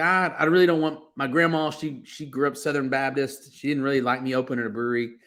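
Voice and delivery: ordinary talk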